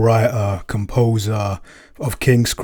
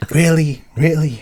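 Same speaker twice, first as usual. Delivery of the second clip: put-on, pitched-up voice with some New York accent; 6 semitones higher than usual. Giving a best Damien impression when asked: Damien impression. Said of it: "give me your best Damien right now".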